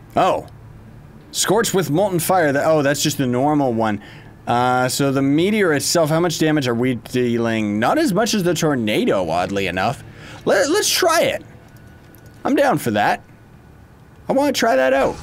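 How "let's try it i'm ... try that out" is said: high voice cracking and breaking up mid-line. Streamer deciding to try out an attack in the game, voice cracking. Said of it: "I don't know why my voice is all breaky and stuff".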